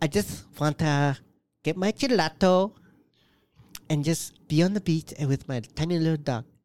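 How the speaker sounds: put-on Spanish accent from Spain. Playing a character's personality for co-hosts, in a spanish spain accent. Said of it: "You got like the Spanish Spain accent there".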